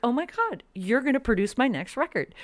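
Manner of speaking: high, thrilled outburst.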